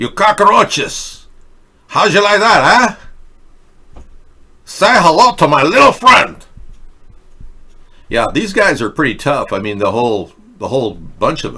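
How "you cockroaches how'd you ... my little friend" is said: high, loud, belted movie-gangster voice. Commenting on cartels, slipping into a Scarface voice. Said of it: "I'm slipping into, uh, Scarface".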